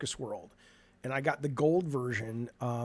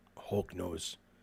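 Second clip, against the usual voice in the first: breathy, whispered put-on voice, all breath; 8 semitones lower, 8 dB quieter than usual. Joking about the Hulk's green poop: Hulk voice. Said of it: "That's my Hulk voice".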